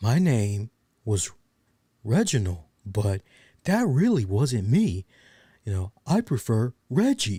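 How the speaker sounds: plain, everyday American voice. Mocking a wrestler's name change: imitating Reggie's plain American voice. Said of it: "you're ditching the French accent".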